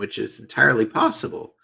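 cracking voice. Speculating about a wrestler's contract future, voice cracking. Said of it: "I don't know why my voice cracked there".

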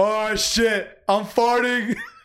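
put-on panic, dragged out very slowly. Recounting a car ride, the speaker acts out a man's sudden remark; mock-panicked. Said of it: "he sounds so panicked".

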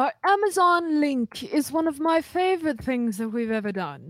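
put-on vintage TV, classic sitcom-style delivery. Starting an ad read for the show, talking like I Love Lucy. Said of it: "I don't know why I'm talking like this".

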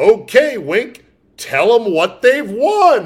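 booming, swooping, very loud game show host voice. Closing an argument with a mock game show line: game show voice. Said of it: "I will invoke my game show voice".

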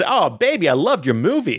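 put-on Italian accent laid on thick. Voicing a movie executive praising a movie: too Italian voice. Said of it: "that's too Italian".

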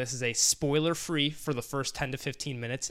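plain

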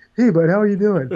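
strange puppet-like character voice. Imitating a mic'd player greeting people, in a weird Muppet voice. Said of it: "And that weird Muppet voice".

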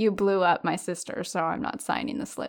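ordinary talk, nothing marked

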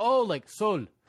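put-on slight Mexican accent, high and loud. Retell his reply when you explained the mexican beer, imitating a slightly mexican accent. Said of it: "pronounces Soul in like a slightly Mexican accent".

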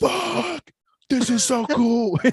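excited scream, very high and slowly drawn out. Retelling how he reacted when the Brood music came on, retelling his screaming. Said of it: "he's screaming".

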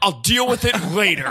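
acted angry dismissive tone. Retelling a man taking their clubs, imitating an angry man. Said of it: "he can't drop how mad he is".

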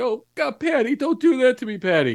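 high, frantic, terrified, panicked screaming yell. Describing how he reacts while someone claws at rubble, acting out a panicked scream. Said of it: "I'm screaming like sort of again".

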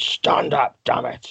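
rough, creaky, very slow man's voice. Show how a timid man changes when denied the response he wants, imitating his voice when refused. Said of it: "That was a good impression".

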